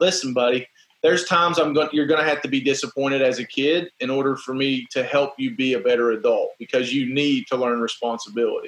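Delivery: ordinary talk, nothing marked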